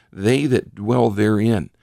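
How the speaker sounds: emphatic, slowed, stressed "they that dwell therein".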